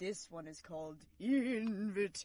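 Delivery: improvised spooky Halloween-type voice. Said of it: "in your best improvised Halloween-type voice".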